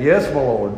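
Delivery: mock-sarcastic delivery. Speaker retells her reply when he called everyone into the truck, mimicking a sarcastic reply.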